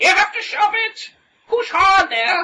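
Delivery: put-on shrill, very high, loud elderly woman voice. Voicing someone heard from inside a stuck door, in an old lady voice. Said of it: "it sounds like some old lady".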